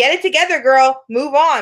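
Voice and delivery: put-on aggressive tone. Retelling what a life coach said to Sam, imitating an aggressive tone. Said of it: "she was super aggressive".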